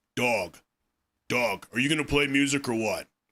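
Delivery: super low, deep, bottom-of-range voice. Speaker describes Kirk, who shows little expression, imitating Kirk's super low voice. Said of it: "He has this super low voice".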